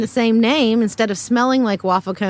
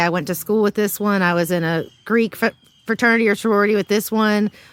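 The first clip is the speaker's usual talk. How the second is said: normal talking voice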